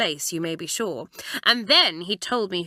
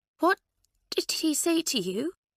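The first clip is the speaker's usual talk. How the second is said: choked, very high, strangled voice; 9 semitones higher than usual. Narrator voicing one character questioning another, in a strangled voice. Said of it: "in a strangled voice".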